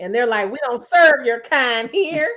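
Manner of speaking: plain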